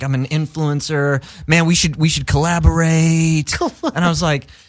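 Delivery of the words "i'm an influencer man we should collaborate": mock influencer dude voice. Retelling meeting an influencer who wanted to collaborate, imitate the influencer guy. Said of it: "I'm literally doing his voice".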